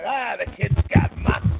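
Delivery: put-on slow, creaky old man voice. Joking about sounding old after praising a player's moxie: imitating an old man. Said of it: "I sound like the old man".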